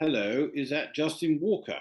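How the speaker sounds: very posh, upper-crust, well-bred upper-class voice. Retelling how a caller greeted him on the phone, very posh voice. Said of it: "a very posh voice said".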